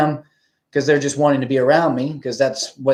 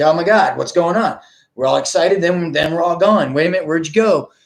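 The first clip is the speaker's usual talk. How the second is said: put-on frantic freak-out, mock panic; 3 semitones higher than usual. Imagining how they will react once we leave, acting out freaking out. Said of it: "they're gonna probably freak out like".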